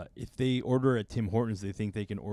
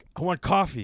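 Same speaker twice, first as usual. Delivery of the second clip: loud, curt, blunt, pitched-up voice; 6 semitones higher, 6 dB louder than usual. Retelling how a customer orders coffee: imitating a blunt demand. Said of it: "the bluntness".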